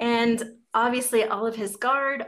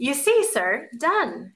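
slow, swooping tone full of great satisfaction; 4 semitones higher, 4 dB louder than usual. Narrating a man reporting to someone he calls sir, with great satisfaction. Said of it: "he said with great satisfaction".

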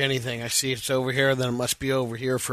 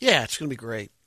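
unconvincing, half-hearted enthusiasm, flat. Answering a question about a birthday celebration: unconvincing, half-hearted enthusiasm. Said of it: "that was not convincing".

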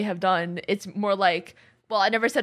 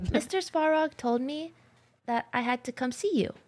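slightly nasal voice, much higher pitch; 5 semitones higher, 5 dB quieter than usual. Speaker showing off a character voice to a co-speaker, doing a Clara voice. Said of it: "I can do a pretty decent Clara voice".

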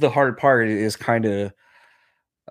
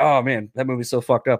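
ordinary talk

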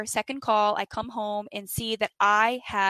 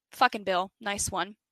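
normal talking voice

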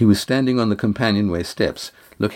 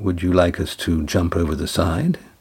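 ordinary delivery

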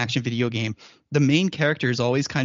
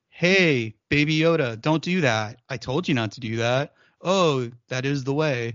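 flat, emotionless put-on voice. Mocking phoned-in line reads with no emotion: flat emotionless Pedro Pascal line reading. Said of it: "There's no emotion".

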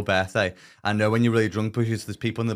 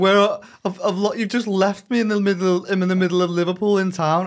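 play-acted, very high, stumbling hysterical sobbing; 10 semitones higher, 4 dB louder than usual. Retelling a phone call from a lost friend: imitating Lucy crying hysterically. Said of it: "hysterically crying".

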